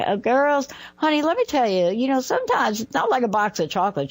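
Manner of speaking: put-on slow, drawling southern accent. Retelling a mother's frog analogy: imitating mom's southern drawl. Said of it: "you could hear my mom with this southern drawl".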